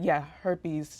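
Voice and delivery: ordinary talk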